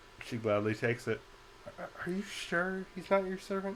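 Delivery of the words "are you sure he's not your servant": pitched-up stage half whisper. A game master voices a character kind of whispering down to a player's character. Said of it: "She kind of whispers down to you".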